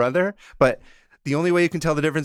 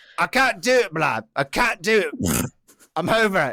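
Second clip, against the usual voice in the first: slow, put-on magical accent of unknown origin; 4 semitones higher than usual. Voicing a made-up character who can't go on: put-on accent. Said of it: "I don't know where this accent comes from".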